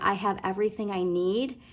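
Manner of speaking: ordinary talk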